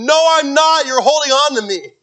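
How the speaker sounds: shrill, very high, loud panicked screaming. Recalling being set in the water by the boys, retelling screaming in panic. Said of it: "I'm just screaming bloody murder".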